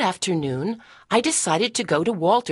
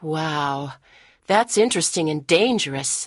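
ordinary delivery

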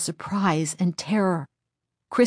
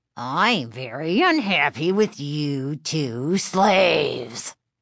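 growly, wicked-sounding dummy voice; 2 semitones lower than usual. Reading a story aloud, Mr. Wood speaks after dropping to the floor: growly voice. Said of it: "he repeated in his growly voice".

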